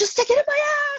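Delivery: acted-out, very high-pitched yelled scream. Retelling the first time doing the needles with her husband: retelling own past scream. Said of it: "and I'm screaming".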